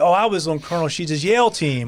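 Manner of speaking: ordinary talk, nothing marked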